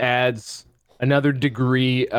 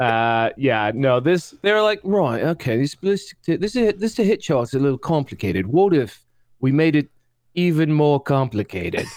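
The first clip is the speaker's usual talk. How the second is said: put-on English accent voice; 2 semitones higher than usual. Mocking game designers for complicating a hit chart, english designer voice. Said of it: "I love your English designer voice".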